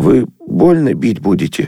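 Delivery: muttered, agonized, torn, hesitant mumble. Sashka answers the passer-by, muttered with agonized hesitation. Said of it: "пробормотала Сашка, мучительно колеблясь".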